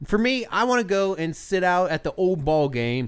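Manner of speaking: ordinary talk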